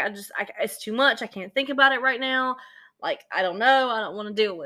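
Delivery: distraught, tearful crying voice, acted out. Retelling how a distraught woman answered about funeral arrangements, imitating someone crying. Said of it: "She's crying".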